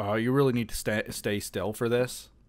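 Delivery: ordinary delivery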